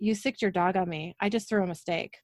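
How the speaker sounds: ordinary delivery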